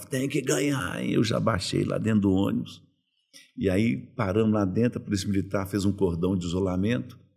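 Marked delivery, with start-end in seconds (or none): 0.0-1.1 put-on demanding shout, pitched high. Retelling fans punching the team bus: imitating fans shouting. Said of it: "os torcedores davam soco no ônibus e gritavam".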